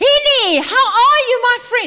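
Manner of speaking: thrilled, booming, shrill, very loud, high excited shout. Describing how Mac talks on the telephone, imitating Mac's excited shout. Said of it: "He speaks like that".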